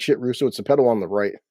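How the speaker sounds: ordinary delivery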